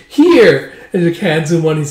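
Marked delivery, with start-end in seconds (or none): 0.1-0.7 put-on excited child voice, higher and louder. Retelling a scene where a little kid hands over a sweet: imitating an excited kid. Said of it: "all excited as he goes".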